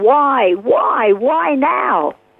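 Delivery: put-on, very slow, drawn-out, despairing cry. Retelling a man beating his fists on his car: imitating a scream. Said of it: "he just screamed out into the darkness".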